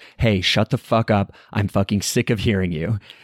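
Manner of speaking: normal talking voice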